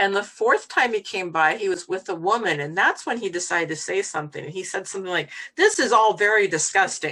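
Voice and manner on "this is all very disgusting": mock remark, loud and carrying. Retelling what a passing man said in front of a woman, a very loud remark. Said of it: "like very loudly".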